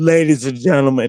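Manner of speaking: very low, bass-heavy morning voice. Retelling opening their mouth on air: imitating own deep pre-coffee voice. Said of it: "a lot of bass and testosterone in my, um, pre-coffee voice".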